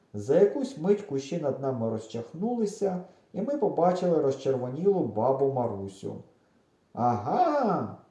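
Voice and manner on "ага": triumphant, victorious exclamation. An old woman parts the bushes and finds the children, triumphant exclamation. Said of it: "переможно вигукнула вона".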